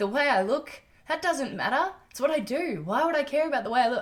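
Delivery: choked-up voice. Speaker talking to listeners about themselves, tearing up. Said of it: "I'm tearing up right now".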